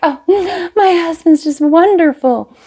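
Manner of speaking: super breathy, high gushing voice. Describing women someone hated, the speaker mimics one in mock breathy gushing. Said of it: "women were super breathy and like".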